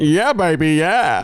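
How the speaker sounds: rough put-on movie-character voice. Asked by the other speaker to do Austin Powers: Austin Powers voice. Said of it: "Do your best, Austin Powers".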